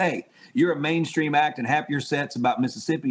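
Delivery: ordinary delivery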